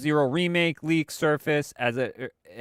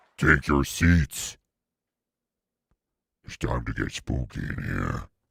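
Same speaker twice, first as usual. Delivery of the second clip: demonic voice through voice modulator, lower. Opening the live show, telling everyone to settle down: demonic voice through voice modulator. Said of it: "The demonic, uh, what's his name voice, uh, in my voice modulator".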